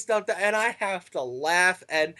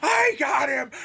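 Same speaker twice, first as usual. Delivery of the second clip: put-on scream, pitched higher; 9 semitones higher, 4 dB louder than usual. Retelling a wrestler's tantrum after a near fall: imitating someone screaming. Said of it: "screaming, going".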